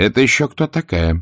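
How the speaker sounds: wary, suspicious tone. Mammy asks Scarlett about a woman who knew her; suspicious question. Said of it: "подозрительно спросила мамушка".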